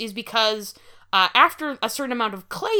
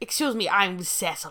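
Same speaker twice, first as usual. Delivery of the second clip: put-on snooty, pretentious voice; 2 semitones lower than usual. Playing a man named Cecil introducing himself: put-on pretentious voice. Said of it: "the version that I thought was more pretentious".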